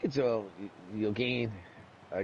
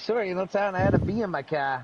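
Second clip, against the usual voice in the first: put-on, pure Boston accent, raised and higher; 7 semitones higher, 5 dB louder than usual. Retelling what a racing friend said after missing a corner: imitating a Boston accent. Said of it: "she had pure Boston accent".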